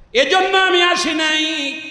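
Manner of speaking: anguished, wailing, pleading tone.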